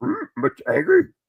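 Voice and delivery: very high-pitched puppet creature voice. Slipping into Frank Oz mode while chatting, Frank Oz voice. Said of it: "Frank Oz mode".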